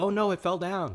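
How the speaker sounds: sarcastic fake dismay. Retelling how a child reacts when the house falls: imitating a child mocking. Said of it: "he's mocking the pigs".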